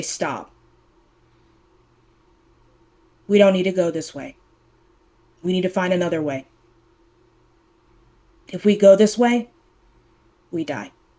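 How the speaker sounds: deadly serious, deep, grave and almost aggressive voice. Narrator voicing her lines in a dream, in the deepest, most serious tone. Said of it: "the deepest, most serious, like almost aggressive".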